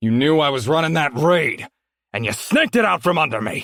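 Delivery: furious, menacing, high-pitched angry shout. Narrator voicing a red-faced man accusing Anders, angry shouted accusation. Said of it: "He was tall, broad, dirty, and angry. / He was tall, broad, dirty, and angry. / he shouted, / the man threatened, / and angry".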